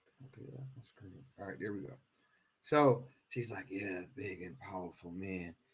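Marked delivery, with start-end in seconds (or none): 3.7-5.5 mock whisper, lower and quieter. Imitating a woman speaking about powerful men: imitating someone whispering. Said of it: "she's whispering with it".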